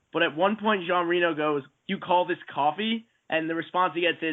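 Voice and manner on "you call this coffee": ordinary delivery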